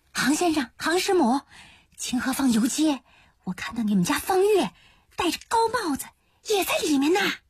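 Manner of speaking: hushed, suppressed whisper. Narrator voices a character who squeezes in the door to tell the family, hushed whisper. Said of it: "压着嗓子耳语".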